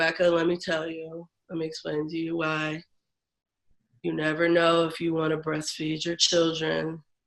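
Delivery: mock monotone delivery. Retelling what he said to her as his patient, imitating his monotone voice. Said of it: "He was very monotone".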